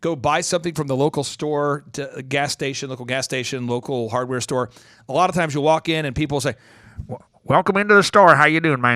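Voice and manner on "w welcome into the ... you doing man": put-on Oklahoma accent, raised voice. Imitating a local store clerk in Oklahoma: Oklahoman accent. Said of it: "talk, um, in Oklahoman".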